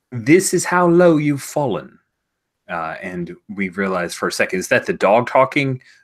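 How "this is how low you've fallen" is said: loud, high-pitched put-on British accent. Retelling what a man said to someone about eating dog biscuits: fake british accent. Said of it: "the dog doesn't use a fake British accent".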